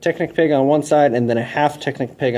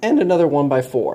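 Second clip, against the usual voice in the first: cracking voice. Listing the boards to take, one after another: a voice crack. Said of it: "that was a nice voice crack".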